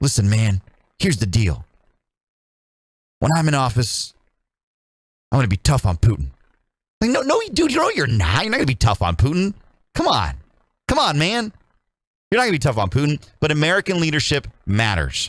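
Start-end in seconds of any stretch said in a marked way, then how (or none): 0.0-6.3 bad put-on elderly politician voice. Recalling a campaign promise by Joe Biden: horrible Joe Biden impression. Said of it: "that's a horrible Biden impression".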